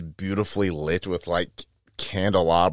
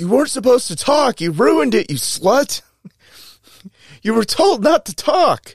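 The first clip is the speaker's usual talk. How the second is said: put-on old man whine, much higher; 7 dB louder than usual. Retelling a story, speaker imitates the old guy scolding a woman; imitating an old man whining. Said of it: "starts immediately whining like a bitch".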